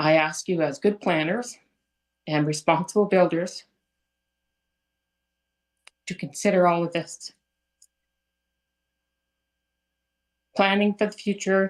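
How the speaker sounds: nervous and teary, near tears. Asking planners to consider a proposal at a public meeting, nervous and teary. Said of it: "I get really nervous and get teary".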